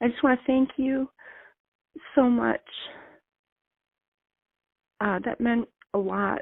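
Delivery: emotional, overcome, high voice. A listener thanking the show's hosts at the end of her message, very emotional. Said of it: "Sorry, very emotional".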